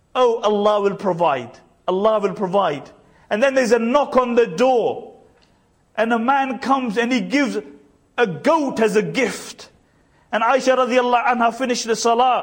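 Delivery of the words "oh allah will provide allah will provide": mock dry, teasing, joking sarcastic tone. Retelling what a woman jokingly said while another broke her fast, imitating sarcasm. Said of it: "she's sarcastically".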